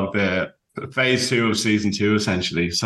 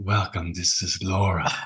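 put-on, sultry British accent; 2 semitones lower, 4 dB quieter than usual. Describing a yoga teacher they made content with, imitating Laura's sultry British accent. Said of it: "she has this sultry British accent".

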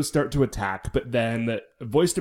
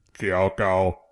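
silly robotic voice, lower; 6 semitones lower than usual. Retelling a character calling out in a dramatic scene: dumb robot voice. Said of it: "now she's got the dumb robot voice".

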